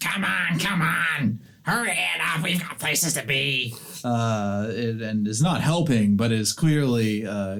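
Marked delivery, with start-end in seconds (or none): 0.0-3.7 high, loud hollering goblin voice. Voicing a goblin leader hurrying others along: goblin leader yelling.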